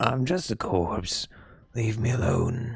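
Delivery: put-on very raspy, hoarse chain-smoker voice. Narrating a story, voicing a corpse in a pile of clothes with a very raspy voice. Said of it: "I gave him a very raspy voice because he looked like a chain smoker".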